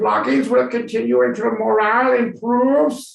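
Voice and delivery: really bad German accent, high and loud.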